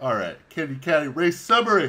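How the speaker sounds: words stretched, spoken through a yawn. Starting the race summary, yawning while speaking. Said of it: "sorry, I'm yawning".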